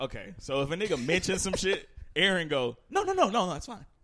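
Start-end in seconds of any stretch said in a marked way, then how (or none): 2.9-3.8 prim polite voice.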